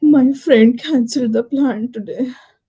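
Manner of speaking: loud, afraid, fearful delivery. Taking a turn in a group exercise, saying the set sentence fearful.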